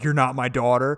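mock tearful voice.

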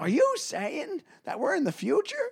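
very high voice with big pitch swoops. Doing a Michael J. Fox impression in a contest with another speaker. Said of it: "My impression is".

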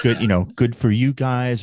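ordinary talk, nothing marked

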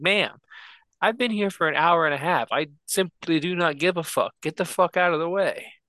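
heated, half-shouted yell. Recounting a parking lot argument with a woman, speaker re-enacts yelling at her. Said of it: "And I'm yelling all this".

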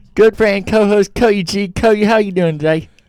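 put-on mixed British and Australian accent. Podcast host introducing his co-host, in a mixed British-Australian intro voice. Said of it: "You have like three voices for the intro".

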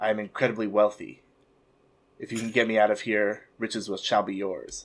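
soft half-whisper, barely there. Roleplaying a captive character speaking toward another character, half-whisper. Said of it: "And whisper".

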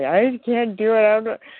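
acted tearful pleading. Retelling being back in his office, unable to keep the diet: imitating own past crying. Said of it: "I was back in his office crying".

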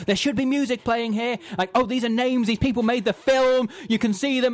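mock aggressive, high-pitched screamed running commentary. Retelling the director commentating over opening credits, imitating Noah Baumbach screaming. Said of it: "he starts screaming".

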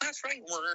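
put-on puppet frog voice. Joining a comic bit as a frog puppet: Kermit the Frog voice. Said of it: "Kermit the Frog here".

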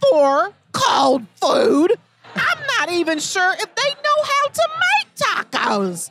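put-on high, silly, funny voice.

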